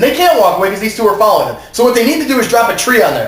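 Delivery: heated, worked-up, high-pitched yelling rant. Talking through a hot-button issue for them, yelling. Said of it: "Sorry, I'm yelling again".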